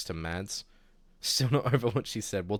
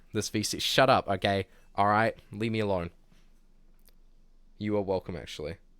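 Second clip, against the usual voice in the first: ordinary delivery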